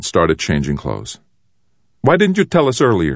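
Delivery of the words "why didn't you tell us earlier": very high, insistent, pressing tone. Narrator reads one boy questioning another who brought battle orders; demanding. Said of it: "demanded Hot Soup".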